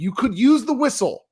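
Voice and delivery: very high, shrill, fed-up yell. Retelling yelling at a teenage ref over uncalled fouls: imitating own yelling. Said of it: "yelling in front of a whole bunch of parents".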